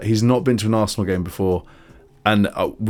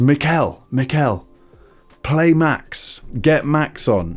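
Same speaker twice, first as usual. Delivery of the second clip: very slow, high, stretched-out calling; 5 semitones higher than usual. Retelling how a fan in the crowd yelled toward Arteta; retelling a fan's shout. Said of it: "he starts shouting towards Arteta".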